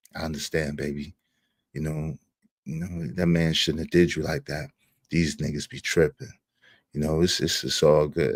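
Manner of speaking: very low, quiet, hushed put-on seductive voice. Showing how he reassures women, in a put-on sexy voice. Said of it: "I put on my sexy voice".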